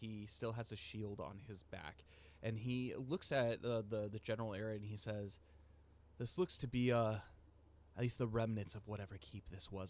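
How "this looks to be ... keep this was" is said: very hushed voice, slightly faster pace. Playing a character looking over the area, in a very hushed tone. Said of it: "he's keeping his voice in a very hushed tone".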